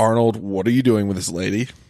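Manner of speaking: plain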